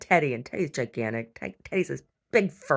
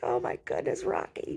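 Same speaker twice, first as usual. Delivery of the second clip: mock chuckling through the words, hushed and breathy; 3 semitones lower, 6 dB quieter than usual. Telling a story about a little dog's owner, imitating him laughing. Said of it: "his daddy laughs".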